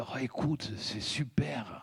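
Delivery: soft, hushed, unvoiced whisper.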